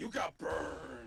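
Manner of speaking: very loud, rasping, rough pro wrestler growl. Playing a game, reacting when the other player gets burned, in a pro wrestler voice. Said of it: "that was my pro wrestler voice".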